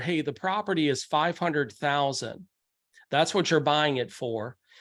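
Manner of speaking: plain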